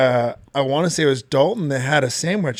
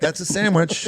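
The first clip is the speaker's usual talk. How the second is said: plain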